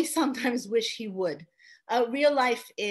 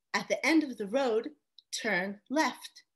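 synthetic, announcer-like GPS navigation voice; 4 dB quieter than usual. After praying for help, the speaker recalls directions in a Google Maps GPS voice. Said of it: "The voice of my GPS".

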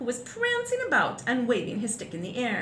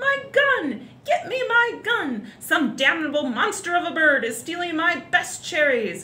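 full, high, raised shouting; 6 semitones higher, 4 dB louder than usual. Reading a story, the Duke below shouts for his gun, shouting. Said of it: "the Duke was shouting".

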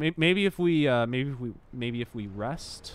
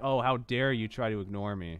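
ordinary talk, nothing marked

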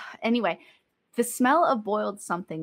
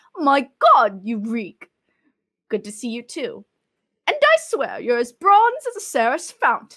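loud put-on Greek old woman accent, hard to place; 2 semitones higher, 7 dB louder than usual. Reading a story aloud, she voices a character's greeting in an unplaceable put-on accent. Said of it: "i don't know where that accent is".

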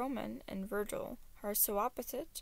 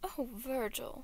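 hissed with mock sympathy; 2 semitones higher than usual. Narrating Deciet as he addresses the bound Virgil: hissed in mock sympathy. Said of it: "Deciet hissed in mock sympathy".

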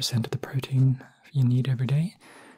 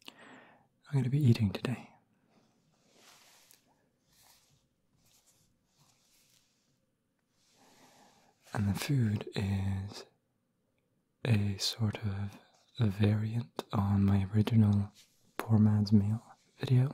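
soft-spoken, low-volume delivery; 3 semitones lower, 3 dB quieter than usual. Narrating a video over machinery noise outside, speaking softly. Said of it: "Now I have to speak softly".

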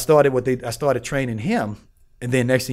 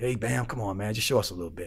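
put-on soft-spoken voice, lower and quieter; 3 semitones lower, 9 dB quieter than usual. Retelling the old mafia head asking to see moves: imitating a quiet voice. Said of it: "with the quiet voice".

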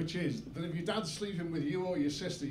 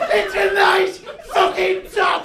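very loud, shrill, furious, angry yelling; 18 dB louder than usual. Retelling an argument with his family over a top: retelling a shout. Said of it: "I'm not shouting".

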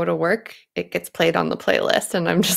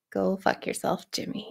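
flat, lacking zest, much quieter; 9 dB quieter than usual. Replying on a show to a viewer's donation message, flat, lacking zest. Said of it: "You need to say that with a little more zest".

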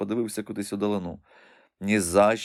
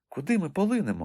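simple, high, inquiring tone; 7 semitones higher than usual. Reading a mermaid asking her beloved a question, quietly asking. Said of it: "тихенько спитала вона".

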